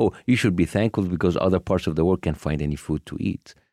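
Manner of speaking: ordinary delivery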